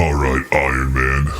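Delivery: very deep, low big villain voice. Doing a line from The Avengers after asking about Thanos: Thanos voice. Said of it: "Let's see if I can do it".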